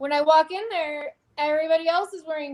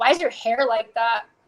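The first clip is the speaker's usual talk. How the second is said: mock scary mean woman voice, lower pitch; 4 semitones lower than usual. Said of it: "she's, like, really scary and mean".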